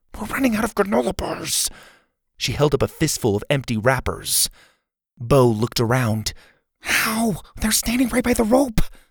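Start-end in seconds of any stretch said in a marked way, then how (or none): 0.2-1.7 high, hushed half-whisper under the breath. Reading a story aloud, the narrator voices a girl in a hut half-whispering to a companion. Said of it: "Zeta whispered".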